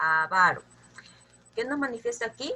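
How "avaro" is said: avaro stressed on second syllable, va. Explaining avaro is a palabra grave, not esdrújula: stress on va in avaro. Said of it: "no es un esdrújulo, es una palabra grave".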